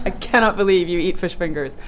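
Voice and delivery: ordinary talk, nothing marked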